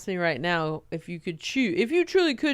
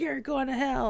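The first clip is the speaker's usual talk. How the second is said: mock scream, higher; 7 semitones higher, 3 dB quieter than usual. Retelling protesters at a parade: imitating protesters screaming. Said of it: "All these people screaming things".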